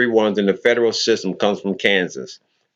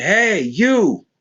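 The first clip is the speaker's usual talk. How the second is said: very high, hollered, shouted call-out; 10 semitones higher than usual. Retelling how the c o called out on the compound: imitating someone yelling. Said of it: "the C O yells at me".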